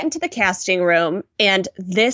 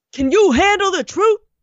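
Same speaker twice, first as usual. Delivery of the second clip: mock, very high-pitched, shrill shouted yell; 11 semitones higher, 3 dB louder than usual. Retelling a TV moment where Tyra yells at the models: imitating Tyra yelling. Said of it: "She yells".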